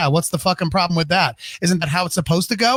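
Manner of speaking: normal talking voice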